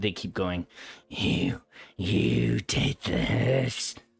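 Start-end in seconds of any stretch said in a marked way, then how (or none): 1.1-4.0 rough, raspy, creaky voice, dragged very slow. Game master voicing figures moving toward the players, in a raspy voice. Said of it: "and in a raspy voice".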